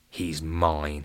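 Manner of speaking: mumbled, muttered under breath. Narrator voicing a cricket player as the ball is tossed to him, muttered. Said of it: "he muttered".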